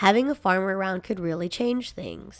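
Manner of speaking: ordinary delivery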